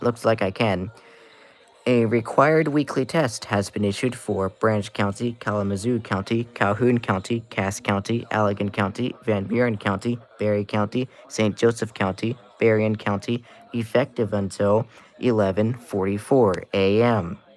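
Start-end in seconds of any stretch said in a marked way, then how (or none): none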